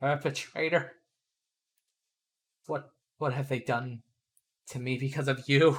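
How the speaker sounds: quiet half-whispered voice. A game master voices the man on the rack speaking to a player, half-whispering. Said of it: "just whispers".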